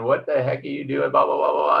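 fast, rough, high, rattled-off yelling rant. Recalling firing up a car near someone's hand, retelling his yell. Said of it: "he's yelling".

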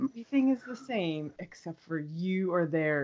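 ordinary talk, nothing marked

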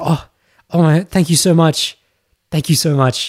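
put-on touched, bashful, flattered and delighted gratitude. Retelling how a girl answered a compliment: imitating a flattered reply. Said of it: "the way a woman does when she feels very flattered and goes".

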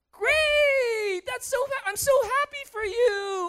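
forced, fake-happy excited gush, very high, slow. Describing pretending to be happy at someone's good news, mock forced excitement, super high. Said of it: "your voice is super high".

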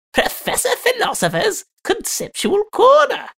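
very high, swooping, squeaky falsetto. Asked for a high-pitched version, repeating the segment title in a high-pitched put-on voice. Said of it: "A high pitched one?".

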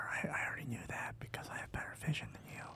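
hushed whisper in a character voice. Replying to a teammate's warning in character: whispering in character. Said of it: "I'm gonna whisper".

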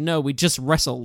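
hard, forceful, aggressive tone, spoken slowly. Retelling a movie scene where a character answers detectives: imitating an aggressive retort. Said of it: "he says it really aggressively".

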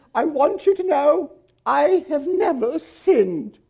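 put-on little old lady voice, pitched way up high. Retelling what a little old lady told a preacher after his sermon, imitating a little old lady. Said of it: "She talked just like that".

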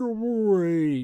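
high, warped, garbled delivery, drawn out. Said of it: "the sound's all distorted".

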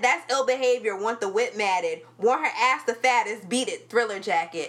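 ordinary talk

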